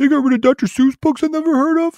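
very high, annoyed, mocking complainer voice. Imitating people who complain online: imitating annoyed people's voice. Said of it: "I don't know why I make these voices for these people".

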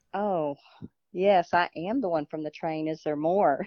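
ordinary talk, nothing marked

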